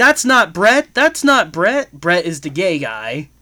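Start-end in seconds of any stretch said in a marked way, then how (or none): 0.0-1.9 mock, repeated, shrill, loud yelling. Retelling a movie scene where a woman keeps objecting: imitating someone yelling. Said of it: "starts yelling".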